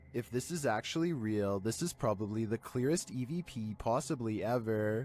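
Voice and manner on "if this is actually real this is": usual speaking voice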